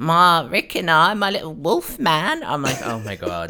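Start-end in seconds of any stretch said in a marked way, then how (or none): 0.0-2.4 weird, very high, loud, scratchy squawk. Retell how the woman who threw the invite over the balcony talks, imitating her weird scratchy voice. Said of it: "her like weird scratchy voice".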